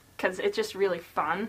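ordinary talk, nothing marked

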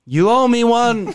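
very high, stretched-out put-on shout. Playing a character who yells to someone after the creature dies: yelling in character. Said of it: "And I yell".

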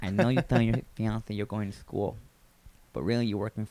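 tough-guy mafia voice. Playing a short mafia character making a demand of someone; gangster voice. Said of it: "A gangster".

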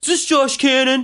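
put-on very high, small boy's little-kid voice. Retelling a phone call where someone grabs the phone, imitating Brandon's voice. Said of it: "you just hear this voice like".

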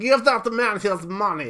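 Russian accent, high and loud.

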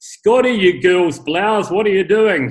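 loud, booming bellow. Recalling a man at work reacting to mistakes, the speaker retells a booming voice. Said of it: "you'd hear this booming voice come out of the office like".

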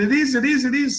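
put-on high screaming. Speaker retelling Joe Cairns running in with news, imitating Joe Cairns screaming. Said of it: "he kept screaming".

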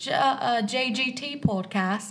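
put-on British accent. Podcast host reading out the show's social handles, in a British accent. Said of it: "say it all in a British accent".

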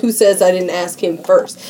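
usual speaking voice

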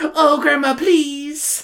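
high-pitched, eager little cartoon voice. Speaker imagines Samantha asking her grandmother for the doll: little Pym voice. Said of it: "making Samantha talk like a little Pym".

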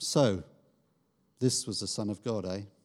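slightly sarcastic, mocking and scoffing. Voicing the centurion's line about the son of god: a bit of sarcasm. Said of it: "we should hear his voice, in his voice, a bit of sarcasm".

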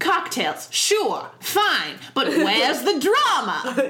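dismissive executive voice, high and slowly drawled.

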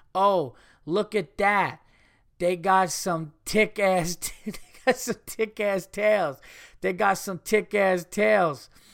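high, loud bellowing holler. Retelling a mother at the zoo talking to her son, imitating a loud yell. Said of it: "talking to her son at the top of her lungs".

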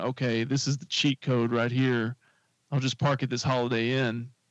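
ordinary talk, nothing marked

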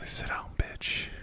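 under-the-breath mutter. Retelling past words said nose to nose, imitating an under-the-breath mutter. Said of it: "I called him a bitch under my breath".

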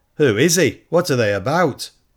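eager, keen, curious tone. Narrator reads the questions people ask about a passing commotion; asking eagerly. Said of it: "the questions were asked eagerly".

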